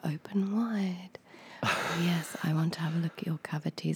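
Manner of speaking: soft whisper spoken right into the mic. Imitating an ASMR video of a dentist: imitating ASMR whisper. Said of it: "it's because it's, like, a, a whisper".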